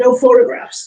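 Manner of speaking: dropped, deep, low-register voice. Retelling a psychic on the stairs telling the camera off: imitating a deep voice. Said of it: "in this deep voice".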